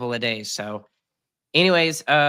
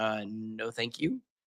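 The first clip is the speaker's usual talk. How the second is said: soft, dismissive brush-off tone. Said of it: "And I'm like".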